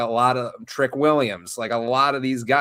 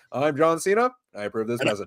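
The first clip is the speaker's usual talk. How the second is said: earnest, serious campaign-ad announcer tone. Imitating a campaign ad line: John Cena campaign-ad voice. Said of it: "the tone of voice that a politician will use in those campaign ads".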